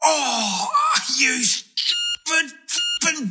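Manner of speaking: sudden pained, hurting cry. In a radio ad, a man slips a disc opening his screen door, pained cry. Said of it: "when he slips a disc trying to open".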